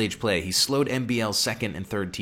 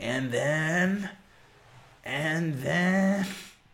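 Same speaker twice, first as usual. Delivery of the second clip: put-on high, very slow old lady voice, "then" drawn out; 6 semitones higher than usual. Quoting a movie's old lady who keeps saying the line: old lady voice from Dude, Where's My Car. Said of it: "that hurts my voice to try to do that old lady's voice".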